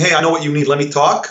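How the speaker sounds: plain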